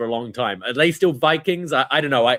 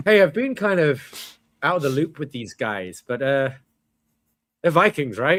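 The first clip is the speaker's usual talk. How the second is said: listless, subdued, low-energy commentator voice; 2 semitones higher than usual. Retelling a commentator's call in the match: imitating a subdued commentator. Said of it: "He sounds so subdued".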